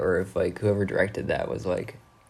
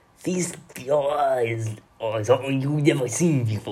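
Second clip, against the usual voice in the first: French mid-Atlantic accent landing Cajun, pitched up; 5 semitones higher than usual. Speaker repeats the line, trying it in an attempted french mid-atlantic accent. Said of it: "That's just kind of Cajun".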